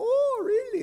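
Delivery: put-on strong Polish accent with very high pitch. Retelling the priest's reply to hearing about discernment: Father Marius Fuchs's Polish accent. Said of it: "In his, his Polish accent".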